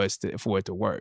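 normal talking voice

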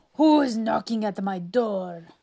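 growled at full volume. Narrator reading a story, a robber answering a knock, growling as Pepe the Gangster. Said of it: "Growled Pepe the Gangster".

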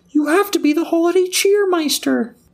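squealing voice pushed way up high.

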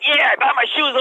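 mock yelling like a man. Retelling a crank call and how the deli man answered, retelling a yell. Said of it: "And the guy starts yelling like".

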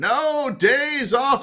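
mock shouting. Retelling a line shouted at a parade: imitating Bill Belichick shouting. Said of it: "when he shouted".

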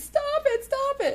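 very high, slow, drawn-out crying. Recapping a scene where Tabitha is furious, imitating Timmy crying. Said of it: "Timmy's crying".

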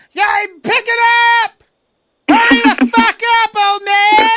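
mock very high, shrill, loud, bossy barking yell. Acting out a support manager yelling at a slow cart worker, imitating someone yelling. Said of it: "you're yelling at".

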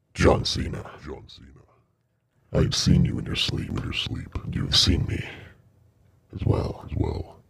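agonizing, rough, creaky, painful voice. Voicing a being heard inside a player's head: painful voice heard in your head. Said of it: "this voice, you, you, you, you do, it, it's painful".

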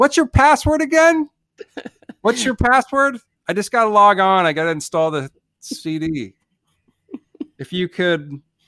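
put-on shrill, very high shouting. Speaker acts out what he once said mid-scene, retelling a shout. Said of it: "I'm shouting".

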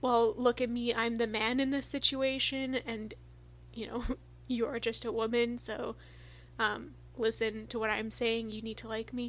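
ordinary talk, nothing marked

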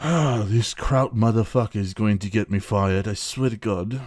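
put-on English accent, under the breath. Imagining an english guy in his office reacting to a tv outburst, english guy impression. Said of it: "an English guy in his office".

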